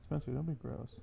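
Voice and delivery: deep, dropped, low and soft voice. Asked to repeat the line the way you just said it, in a low voice. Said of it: "Say it in that low voice again".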